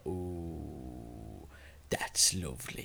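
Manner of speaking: deep, soft, sensual purr, drawn-out ooh. Retelling how the old salts answered the new lads, with a mock deep, sensual purr. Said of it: "in a deep, sensual voice, they would purr".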